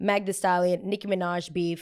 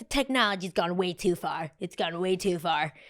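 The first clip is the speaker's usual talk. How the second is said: put-on grumpy, grumbling old person voice. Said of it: "those old people that are like".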